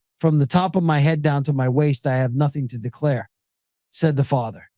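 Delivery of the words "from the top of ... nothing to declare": ordinary talk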